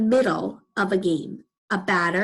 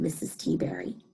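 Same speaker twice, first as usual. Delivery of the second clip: ordinary delivery, nothing marked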